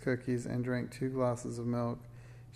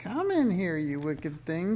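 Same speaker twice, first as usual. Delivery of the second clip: high-pitched, swooping screeching cry; 5 semitones higher, 4 dB louder than usual. Reading a story aloud, the narrator voices Madame Snickersnee grabbing Minx: screeching Madame Snickersnee voice. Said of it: "she screeched".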